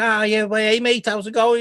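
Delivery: put-on Scouse Liverpool accent. Describing how UK stereotypes used to center on Liverpool, doing a Liverpool accent. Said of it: "typically it used to be Liverpool".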